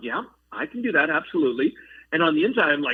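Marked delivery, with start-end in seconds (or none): 0.0-1.7 mock cool, unbothered, calm, collected tone. Retelling own answer to a request to go on stage: imitating own calm, collected reply. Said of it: "calm and collected".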